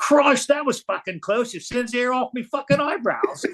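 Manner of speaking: put-on comical panicked Australian accent, very high. Retelling what an Aussie nearby said, imitating his panicked comical Australian accent. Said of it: "this panicked voice comes up in his comical Australian accent".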